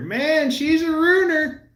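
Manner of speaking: high, loud, jokey mock exclamation.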